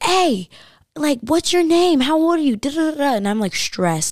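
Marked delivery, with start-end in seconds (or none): 0.0-3.1 loud, high, screaming call-out. Retelling being followed by a driver calling out questions: imitating someone screaming. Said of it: "I could hear him screaming".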